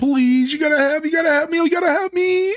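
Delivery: put-on crying, pleading ghost voice. Retelling a scene where a scared ghost begs for help: imitating Wisp crying. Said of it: "He starts crying and everything".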